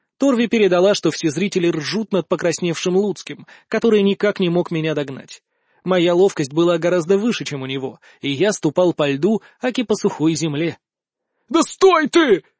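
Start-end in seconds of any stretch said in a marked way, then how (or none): 11.5-12.4 high-pitched, loud hollered shout. After five minutes of futile chase, a man calls to his opponent; shouting. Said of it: "закричал он".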